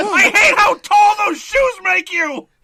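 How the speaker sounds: spittle-flying rage, very high and very loud. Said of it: "getting spittle all in my face".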